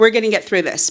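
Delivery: ordinary talk, nothing marked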